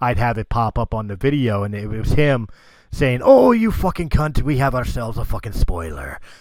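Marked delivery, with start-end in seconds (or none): 3.2-6.2 put-on lively, swooping, sing-song Welsh accent. Recalling the spoiler warning a buddy recorded for your videos, in Richard J's Welsh accent. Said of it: "in his in his Welsh accent".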